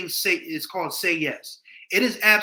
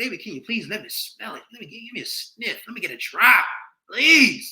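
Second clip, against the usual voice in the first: high, mock pleading beg; 5 semitones higher, 4 dB louder than usual. Imitating men of the past begging on their knees: mock begging. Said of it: "dudes was begging back in the day".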